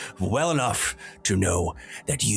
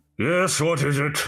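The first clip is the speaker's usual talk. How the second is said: muffled voice, much higher pitch; 7 semitones higher than usual. Answering a bang on the office door from inside, in a muffled voice. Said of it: "you hear in a muffled voice".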